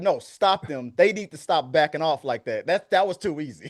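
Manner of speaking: ordinary delivery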